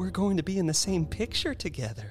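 bashful. A woman answers the doctor who has just greeted her, shyly. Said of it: "she said shyly".

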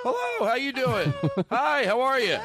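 very high, swooping, super-friendly, dopey voice. Improvised back-and-forth of endless hellos between two performers: friendliest, dumbest guy voice. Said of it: "This is the friendliest, dumbest guy in the world".

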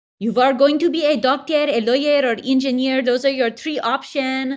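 pushy, high, loud voice. Explaining how the mom who raised them pushed a stable career, imitating mom's voice. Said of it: "that's my mom's voice".

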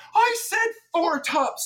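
very high-pitched, drawn-out, furious, angry scream. Acting out a server fighting with the host for a hiring video: imitating a screaming server. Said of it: "just screaming and fighting".

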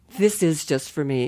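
ordinary talk, nothing marked

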